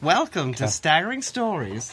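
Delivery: campy, overdone American drag-queen voice. Urging someone to try an accent, saying the welcome line in an American drag-queen voice. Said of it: "Sounds like an American drag queen".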